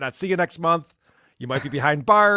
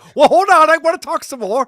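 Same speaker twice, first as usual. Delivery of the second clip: put-on eager voice, higher and louder; 12 semitones higher, 10 dB louder than usual. Imitating a prank call victim who won't hang up: imitating Scott. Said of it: "Scott's like".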